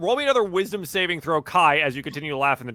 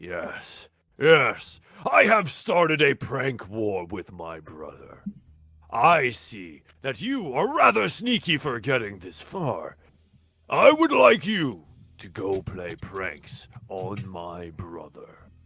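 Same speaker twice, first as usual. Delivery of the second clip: swooping dragon character voice; 5 semitones lower than usual. Voicing a dragon giving the thieves a job: speaking as a dragon. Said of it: "you all come up to the dragon".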